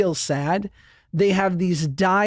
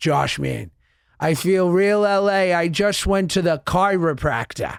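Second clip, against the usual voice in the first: put-on broad Boston accent laid on thick. Retelling a phone call from his big brother Dan: Dan's thick Boston accent. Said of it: "he's got a thick Boston accent".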